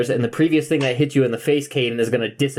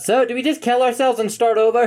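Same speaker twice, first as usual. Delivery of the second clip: very high-pitched, shouted-out yell; 10 semitones higher than usual. Voicing Aelig as he asks the group whether to start over: yelling in character. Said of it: "Aelig just yells out".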